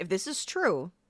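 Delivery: imitated angry, pissed-off voice. Retelling the CIA director's words to his staff: imitating a pissed-off director. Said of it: "pissed off 'cause he's going".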